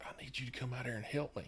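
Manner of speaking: very quiet whisper. Retelling a brother-in-law whispering on the phone asking for help, re-enacting a whisper. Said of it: "he's whispering on the phone".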